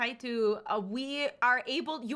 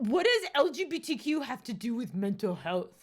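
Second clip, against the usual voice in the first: snide, sneering, bad-faith troll voice; 2 semitones lower than usual. Retelling a troll's question from chat: imitating a chat troll. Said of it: "So that's my best impression".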